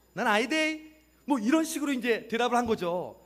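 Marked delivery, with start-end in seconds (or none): 0.2-1.0 put-on broad Gyeongsang regional dialect accent. Acting out a reply as if Galilee were Gyeongsang, Gyeongsang dialect accent. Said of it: "갈릴리가 경상도라고 했다면 ... 베드로가 이렇게 대답한 거예요".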